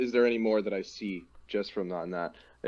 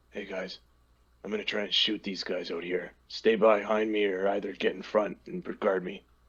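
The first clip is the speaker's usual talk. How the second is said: soft, hushed half-whisper. A player character half-whispers a plan to the rest of the party, half-whispering. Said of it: "I'm whispering this".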